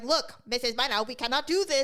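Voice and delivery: put-on Filipino accent, high and loud. Imagining a future nurse who is a little mean: put-on Filipino accent. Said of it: "that's very racist".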